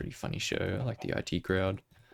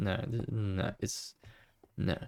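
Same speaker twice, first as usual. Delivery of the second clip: ordinary talk, nothing marked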